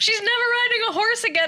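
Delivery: fake hysterical voice. Retelling a prank call to mom, imitating acting hysterical. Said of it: "I'm acting hysterical".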